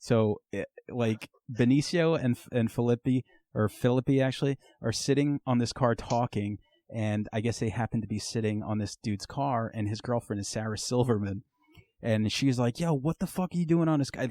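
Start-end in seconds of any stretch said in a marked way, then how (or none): 12.8-14.3 put-on high-pitched angry shouting. Retelling a movie's opening scene, imitating someone yelling. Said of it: "they're just yelling".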